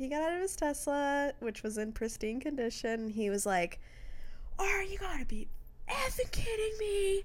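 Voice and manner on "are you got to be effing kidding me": very high-pitched fake yelling. Retelling what a Tesla driver said after getting out of his car, fake yelling. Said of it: "I like your fake yelling to get quieter".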